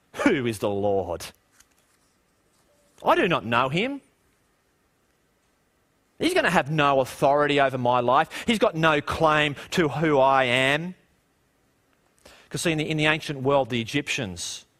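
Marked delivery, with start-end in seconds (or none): 0.2-10.9 mock scornful, contemptuous, disdainful sneer. Retelling Pharaoh's words from Exodus: imitating Pharaoh sneering. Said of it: "filled with sneering and filled with disdain".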